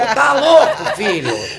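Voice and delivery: slow yelling.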